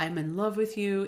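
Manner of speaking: normal talking voice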